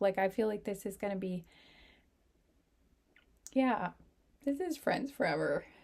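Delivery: tearful, weeping while talking. Speaking to a group about a friendship, crying. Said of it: "I can't stop crying in this group".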